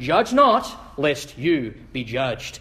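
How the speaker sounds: low, slow, sure and self-assured delivery. Mimicking people who quote Jesus to shut down criticism, imitating a confident voice. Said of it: "they sort of say it with this real confident voice".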